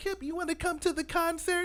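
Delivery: very high put-on voice, casual tone. Retelling how Jay invited you to the concert, imitating Jay's voice. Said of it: "I totally played her with the voice".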